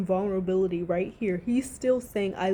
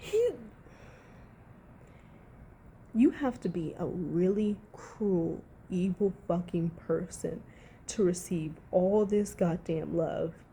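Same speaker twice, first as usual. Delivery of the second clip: low, bitter, pissed-off, seething ranting anger; 3 semitones lower, 5 dB quieter than usual. Ranting about how a man was treated, sounding pissed off. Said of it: "I am so pissed right now".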